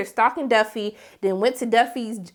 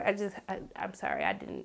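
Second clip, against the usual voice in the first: normal talking voice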